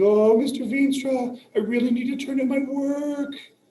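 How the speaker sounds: fake tearful sobbing, very high and loud, pleading. Imitating a student who comes in crying to hand in late work: mock crying student. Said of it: "you're crying? You're like".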